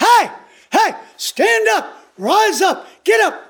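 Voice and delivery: very slow, high, drawn-out yell. Explaining a Greek reading, acting out a yell at a crippled man. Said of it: "it's like Paul is yelling at the crippled guy".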